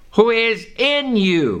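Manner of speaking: slow, with stress on the word "in". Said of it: "I stress the word in".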